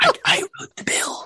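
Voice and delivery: eerie, creepy whisper, close to the mic. Mocking how a man whispers into the mic: imitating his creepy mic whisper. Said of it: "You know how he whispers into the mic?".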